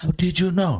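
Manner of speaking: movie character voice. Imitating a movie character asking a question, like the Chinese guy from The Last Dragon. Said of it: "You sounded like that Chinese guy from The Last Dragon".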